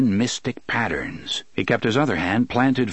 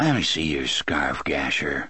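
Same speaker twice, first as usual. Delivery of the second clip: very low, thick, hushed, soft voice; 10 semitones lower, 4 dB quieter than usual. Narrator reads a character speaking to another character, in a soft, thick voice. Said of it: "he said in a soft, thick voice".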